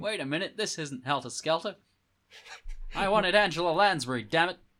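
Australian-sounding voice. Voicing a crowd member who wanted helter skelter: australian accent. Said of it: "Is that your, that your Australian accent?".

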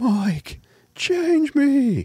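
very high, eerie ghostly scream. Recalling what a foul-smelling man used to scream at mike: retelling a ghostly scream. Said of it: "He had a very ghostly fucking voice".

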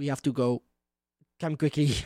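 whispering in character. Playing a character whispering into an unseen ally's ear: whispering in character. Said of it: "I whisper in his ear".

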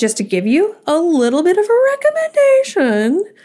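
very high voice with big upward sing-song lilt. Starting to give listeners a recommendation, major voice inflection. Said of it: "that was a major voice inflection".

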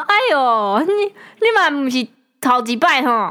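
mock sneering, sarcastic, slow mocking delivery. Retelling how an old man taunted her after a crash: imitating a mocking taunt. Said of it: "借机嘲讽，他说".

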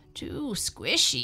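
small, grumbling, complaining tone. A girl sinks into the cushions of a middle-sized chair, grumbling. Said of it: "she grumbled".

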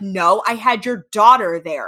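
very loud, angry, defensive tone. Repeating his line to prove it to the others: imitating a defensive reply. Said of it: "He got mad defensive".

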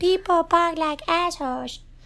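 put-on puppet voice. Warning that he repeats everything, the speaker demonstrates the phrase in Elmo voice. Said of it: "especially in Elmo voice".

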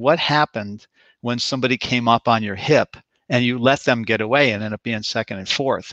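ordinary talk

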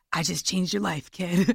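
put-on smoker's voice. Recalling the first sponsor in recovery handing over a book: real smoker's voice. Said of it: "this like real smoker's voice".

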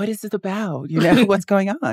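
play-acted nice, proper voice. Recounting talking to the cops who asked for ID, put-on nice polite voice. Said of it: "you get your nice voice".

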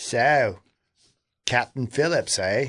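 put-on unhurried, slow Australian accent. Retelling a joke about an australian press person at a junket: australian accent. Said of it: "there's an Australian guy and goes".

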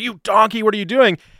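very high-pitched, screamed, abusive tone. Retelling how he screamed at a chef in the episode: retelling a scream. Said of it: "he's screaming at her".

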